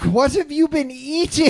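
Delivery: shrill, very high-pitched, shouted yell. A player's character yells back at a huge opponent, yelling back. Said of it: "I yell back".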